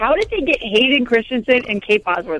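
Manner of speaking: plain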